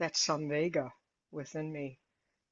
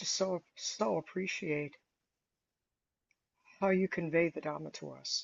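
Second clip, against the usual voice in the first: teary, heartfelt voice wet with tears. Thanking a Dhamma teacher for the talk, tearing up. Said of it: "I'm tearing up as I talk about this".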